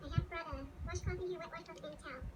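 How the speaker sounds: sped-up, high, fast chattering chipmunk voice.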